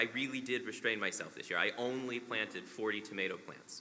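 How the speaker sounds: ordinary talk, nothing marked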